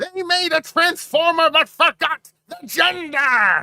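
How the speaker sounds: very high, loud, slow, drawn-out alien voice. Inventing a new character, the speaker tries out a line in Ferengi voice. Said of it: "That's the other trick for Ferengi voice".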